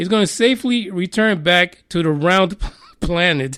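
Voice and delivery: breaking into laughter mid-line.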